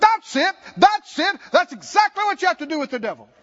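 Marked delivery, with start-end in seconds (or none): 0.0-1.4 loud, high shout with words held long. Retelling how a preacher reacted to a story: imitating someone yelling out loud. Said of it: "he just yelled out loud".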